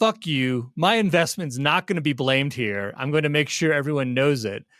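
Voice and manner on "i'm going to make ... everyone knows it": ordinary talk, nothing marked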